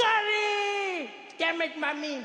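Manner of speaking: very high, long, exasperated, drawn-out shriek. Retelling a child screaming about curry every day: retelling a scream. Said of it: "He screams like".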